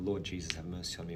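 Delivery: normal talking voice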